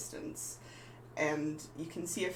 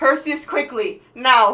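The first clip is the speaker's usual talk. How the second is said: very high, very loud yell from afar; 9 semitones higher, 20 dB louder than usual. Game narrator voicing a figure waving from a cottage doorway, yelling from a distance. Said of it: "a voice off in the distance yelling".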